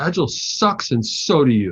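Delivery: heavy, thick, put-on Russian accent. Retelling what a man said while pointing at the speaker, in a thick Russian accent. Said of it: "In a thick Russian accent".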